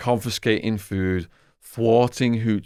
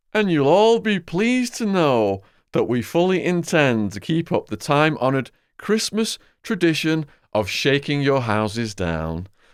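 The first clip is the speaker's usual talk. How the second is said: mock official announcer voice, sarcastic, swooping sing-song; 7 semitones higher than usual. Retelling a prison guard's Christmas taunt to inmates, mimicking his sarcastic voice. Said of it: "his sarcastic voice".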